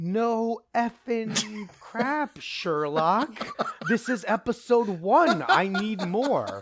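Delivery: slow, drawn-out yelled outburst. Retelling reacting to an episode ending "to be continued": retelling a yell. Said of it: "and I yelled".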